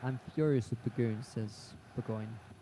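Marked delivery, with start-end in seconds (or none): none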